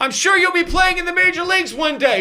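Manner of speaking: play-acted very high, shrill, furious, angry yell. Acting out someone's trademark reverse heckling, in a mock-angry scream. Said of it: "he screams it with an angry voice".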